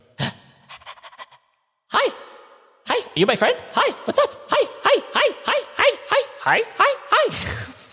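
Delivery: very high, tiny little pug voice. Voicing a shrunken pug looking up at a player: voicing a shrunken pug. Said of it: "looks up at you, goes".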